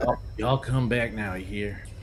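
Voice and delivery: very slow, drawn-out Texan cowboy drawl. Going through your accents, showing the John Wayne kind: slow John Wayne-style drawl. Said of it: "the very slow like".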